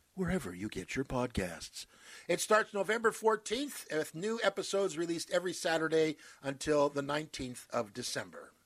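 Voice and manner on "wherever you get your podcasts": radio announcer, broadcaster announcing delivery. Listing where to find the podcast, in the speaker's broadcaster voice. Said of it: "as I like to say in my broadcaster voice".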